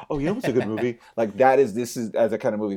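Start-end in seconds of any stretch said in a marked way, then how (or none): 0.1-1.0 mock affected, pretentious film-snob voice. Imitating how people recommend a certain kind of movie, mock-pretentious movie recommendation. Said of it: "your voice becomes something like this".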